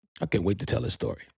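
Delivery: ordinary delivery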